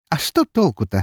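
spoken through a laugh. Alpha answers the narrator's complaint, laughing. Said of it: "рассмеялся Альфа".

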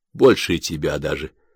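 usual speaking voice

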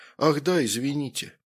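plain

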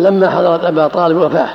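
plain

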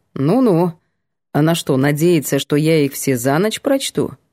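ordinary delivery

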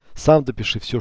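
usual speaking voice

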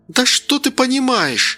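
shouting. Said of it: "прокричала Лора Карленовна".

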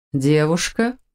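scornful, mocking voice. A woman busy fighting golems echoes a companion's remark back, mocking question. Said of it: "насмешливо переспросила Бон".

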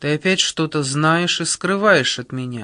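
plain reading voice

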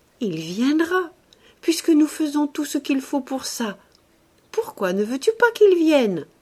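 bold, tender, slightly flustered. A woman in love repeats her words into his neck, boldly loving, a little embarrassed. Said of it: "avec une jolie audace d'amoureuse, un peu confuse".

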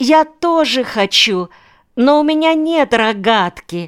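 imploring, begging tone. A little girl who touched the narrator's sleeve asks to come too, pleading. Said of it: "умоляюще просила она".

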